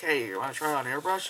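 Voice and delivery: ordinary talk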